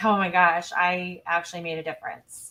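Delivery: ordinary delivery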